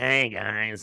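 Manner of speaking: put-on hoarse, scratchy, raspy mischievous kid voice. Describing an actor from The Little Rascals to a listener, imitating his raspy voice. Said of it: "has that really, like, raspy voice".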